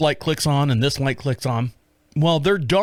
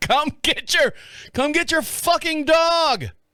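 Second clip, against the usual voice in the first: play-acted very high, hollered, far-carrying shout; 12 semitones higher than usual. Telling a story about a dog, recreating what the speaker shouted: retelling a yell. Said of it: "I'm yelling".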